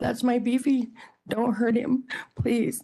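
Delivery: mock screaming. A parent recounts the moment their car was surrounded, retelling a scream. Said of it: "And I started screaming".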